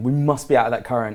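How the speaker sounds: ordinary talk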